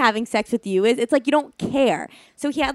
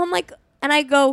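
ordinary talk

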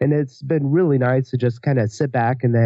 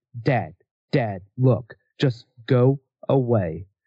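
put-on angry, bossy three-year-old voice, drawn out. Retelling putting a three-year-old son to bed: imitating an angry three-year-old. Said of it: "he gets angry".

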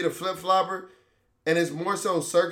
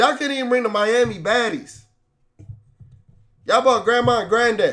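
yelling, much higher pitch; 5 semitones higher, 7 dB louder than usual. Out in the rain, the speaker rants at a camera, yelling. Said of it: "why I'm out here yelling at a fucking camera".

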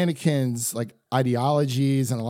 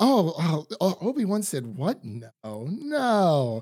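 very slow, scatterbrained, each "no" stretched out; 4 semitones higher than usual. Retelling a scene, acting out Padme hearing bad news: imitating Padme. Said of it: "And she's just like".

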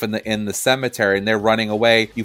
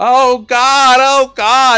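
mock, shrill, very high, very loud, very slow wail; 9 dB louder than usual. Retelling a scene at a mausoleum: imitating someone freaking out. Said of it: "Ed immediately starts freaking out".

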